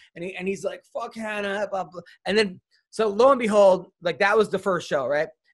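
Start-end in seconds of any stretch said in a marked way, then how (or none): 0.9-2.0 quieter, mock-drunk slurring voice. Retelling what a drunk soccer captain said on the air, imitating drunk Seth. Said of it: "He's all drunk".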